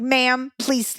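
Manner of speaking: rude, dismissive tone. Retelling how airline staff spoke: imitating rude airline staff. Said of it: "the airline was so rude".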